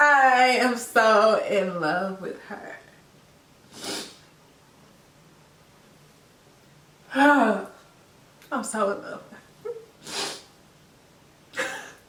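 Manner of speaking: crying with emotion. Talking about her girl, crying. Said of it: "I'm crying".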